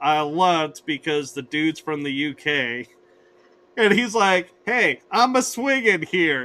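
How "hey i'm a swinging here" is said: put-on heavy, thick New York accent, laid on. Describing Spider-Man swinging between vehicles on a bridge, Spider-Man's thick New York accent. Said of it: "you hear him in this thick New York accent".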